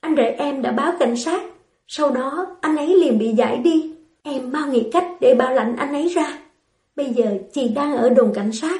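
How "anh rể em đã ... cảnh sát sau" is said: plain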